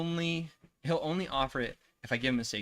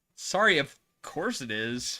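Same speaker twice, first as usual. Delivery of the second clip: plain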